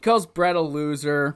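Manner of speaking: ordinary delivery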